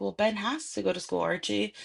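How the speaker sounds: ordinary delivery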